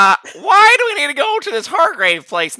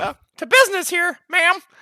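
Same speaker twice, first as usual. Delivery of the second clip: talking in a cartoon mouse voice; 3 semitones higher than usual. Speaking in character to a woman who looks down at them, sounding like Mickey Mouse. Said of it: "I feel like I'm talking like Mickey Mouse".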